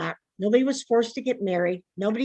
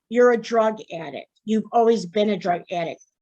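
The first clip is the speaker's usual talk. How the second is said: normal talking voice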